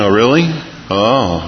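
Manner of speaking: feigned, put-on interested voice. Speaker showing the voice put on when someone calls with a need, fake interested voice. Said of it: "put on the interested voice".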